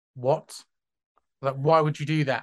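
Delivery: mock, acted defensive tone. Retelling how they reacted when a man offered to gift them money, mock-defensive reply. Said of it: "And I got like defensive".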